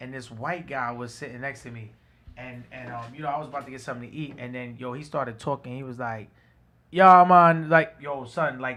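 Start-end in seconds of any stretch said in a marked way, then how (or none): 6.9-7.7 put-on very thick Jamaican accent, loud. Retelling what a guy at a restaurant in Jamaica said: imitating thick Jamaican accent. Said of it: "had the thickest Jamaican accent".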